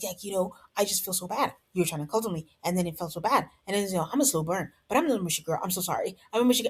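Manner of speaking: frantic, mile-a-minute, fast rattled-off babble. Recapping a show, the speaker imitates how Courtney talks, imitating Courtney's frantic talk. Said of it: "She speaks very frantically".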